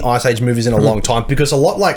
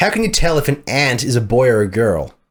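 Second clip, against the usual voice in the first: put-on American accent. Reading a joke aloud in an american accent. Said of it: "So if you read this in American accent".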